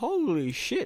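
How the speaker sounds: high, slow amazed exclamation.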